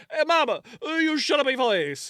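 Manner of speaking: put-on Italian accent. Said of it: "well he's Italian".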